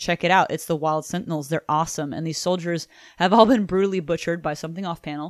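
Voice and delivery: normal talking voice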